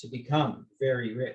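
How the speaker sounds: plain reading voice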